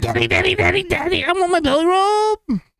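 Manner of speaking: very high, squeaky, excited, hyper little dog voice. Voicing the speaker's little Jack Russell, who is hyper: hyper Riley voice. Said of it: "she's hyper. ... I did her voice".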